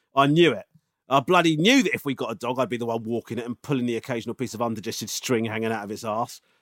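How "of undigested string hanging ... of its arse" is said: ordinary talk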